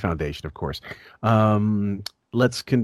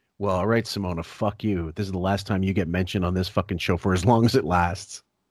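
plain

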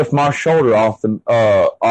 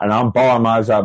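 plain

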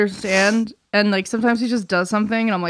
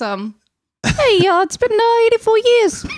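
put-on old-timey 1930s Brooklyn kid voice; 13 semitones higher, 5 dB louder than usual. Redoing a voice for the others on the show, 1930s Brooklyn kid voice. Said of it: "That's the little Brooklyn kid from the 1930s?".

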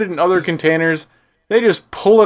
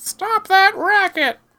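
very high, put-on old woman's voice; 14 semitones higher than usual. Joking about poking the ceiling at a barking dog: old lady voice. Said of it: "you're an old lady in sandals".

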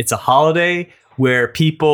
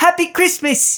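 put-on British accent, pitched very high. Quoting a line from the Harry Potter film: put-on British accent. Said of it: "that's a fantastic accent".

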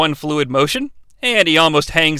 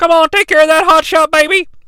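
very high, shrill, loud, megaphone-like yelling; 12 semitones higher, 5 dB louder than usual. Recapping a wrestling match, quoting a man on the megaphone, retelling a yell. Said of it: "he yells".

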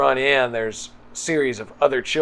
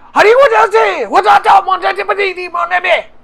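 put-on shouting child voice, higher and louder; 12 dB louder than usual. Voicing a fleeing child who yells at the players: yelling child. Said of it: "he just starts yelling".

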